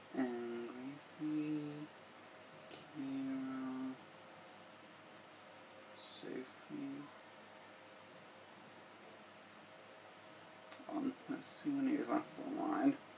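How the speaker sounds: mumbled words. Scrolling through phone contacts to pick a friend to call, mumbling. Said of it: "I'm like mumbling".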